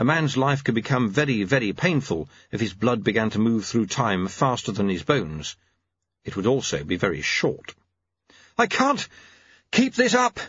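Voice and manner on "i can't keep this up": very high, winded, breathless panting. Reading a man running after Lutze, panting. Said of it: "he panted".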